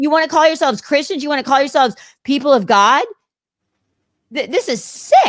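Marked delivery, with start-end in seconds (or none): 1.2-5.3 distressed, higher. Condemning people who spread hate online, upset. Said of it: "I'm upset right now".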